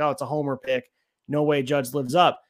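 ordinary talk

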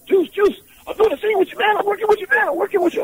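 play-acted eager gushing, very high and rushed. Retelling greeting a co-star before a scene: imitating own excited past self. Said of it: "I'm all excited".

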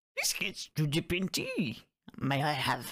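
croaky voice with swooping, sing-song pitch. Two speakers trying out impressions, one attempts a high croaky Yoda voice. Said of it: "he's got that high voice, but it's a little bit croaky".

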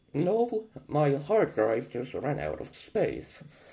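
swooping, sing-song delivery with wide pitch swings. Joking as a guest on the show: Stephen Hawking impression. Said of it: "our special guest, Stephen Hawking".

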